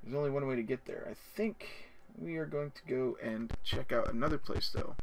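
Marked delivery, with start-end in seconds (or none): none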